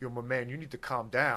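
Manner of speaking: laid-back, low, soft, easy delivery.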